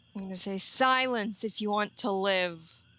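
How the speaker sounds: booming, about three times as loud. A player voices their character's line during a game: booming voice. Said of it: "in my booming three times as loud voice".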